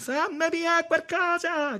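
shrill, very high, frantic shout. A woman seized by a fit in her chest, shouting.

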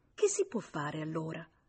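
ordinary delivery

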